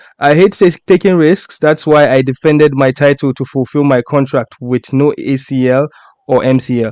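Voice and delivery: normal talking voice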